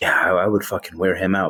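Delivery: put-on whispering. Retelling what a woman said to another person: imitating someone whispering. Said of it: "whispering to him".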